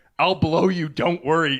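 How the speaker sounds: pained, aching voice of someone hurting. Retelling what someone in the room would hear: imitating a pained voice. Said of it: "in a pained voice".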